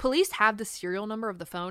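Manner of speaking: police stressed, punched and fast. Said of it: "Hell, I have the serial number".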